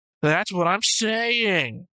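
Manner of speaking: very slow, drawn-out voice, high-pitched. Teasing the other speaker by imitating the other speaker's voice. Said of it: "let me see if I can do this in your voice".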